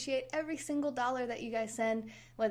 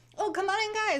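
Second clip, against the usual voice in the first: loud, raised game-show host yell; 9 semitones higher, 6 dB louder than usual. Welcome people coming in to the broadcast with the Survivor line, yelling like Jeff Probst. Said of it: "I'm yelling at you".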